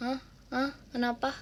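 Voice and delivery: soft, groggy, dazed, half-asleep mumble. Retelling own reaction on being woken from sleep: imitating own half-asleep voice. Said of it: "Aku beneran yang setengah sadar".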